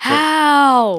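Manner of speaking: very loud, high, drawn-out angry shout. Showing how loudly one yells at annoying players in a game: loud angry yell. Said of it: "making my voice sound louder".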